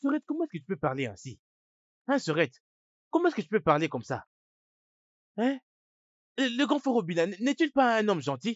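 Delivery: loud, high-pitched yelling shout. Scolding Sorette for how she spoke about brother Obila, shouting. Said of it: "Essaies-tu de crier sur moi ou quoi?".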